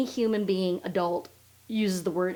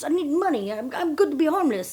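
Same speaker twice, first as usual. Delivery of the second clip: fake French accent, pitched up; 8 semitones higher than usual. Play his side of a retold exchange with a woman, giving him a French accent. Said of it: "I don't know why I make him have a French accent".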